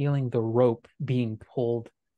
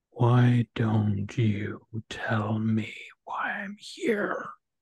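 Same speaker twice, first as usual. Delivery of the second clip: sepulchral, very slow voice from the depths. Voicing a partner's voice heard by the other players: voice like the grave. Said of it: "a voice like the grave".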